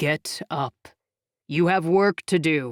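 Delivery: deep, low-set, summoning voice. Narrator reading a voice that stirs Sophia from the darkness, deep booming voice. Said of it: "A deep voice boomed".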